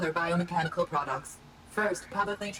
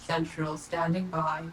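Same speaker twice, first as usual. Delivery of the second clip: public-transit announcer lady voice. Central answering a radio call, in a train announcer lady voice. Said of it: "this is uh the voice of the train lady".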